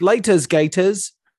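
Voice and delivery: cartoonish fake British accent. Agreeing the lead's accent was cartoonish, doing a fake British Stephen Grant accent. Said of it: "it was very much that".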